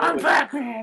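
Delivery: put-on high-pitched little kid's voice. Speaker mocking a Batman figure, saying its line as kid-voiced Batman. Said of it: "he has like a kid's voice".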